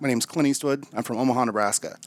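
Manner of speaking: ordinary talk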